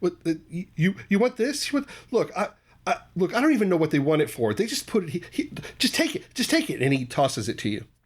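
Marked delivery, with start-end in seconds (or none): 0.0-6.8 nervous stammering, higher and faster. Game master voicing a character who hands over a glowing vial; nervous stammering. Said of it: "He's obviously very nervous".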